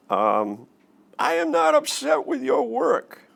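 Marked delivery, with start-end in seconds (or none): 1.1-3.1 very high, ragged, rough frustrated banshee shriek. Showing how tone changes a sentence's meaning, with frustrated screaming. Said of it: "you're frustrated and screaming and acting like a banshee".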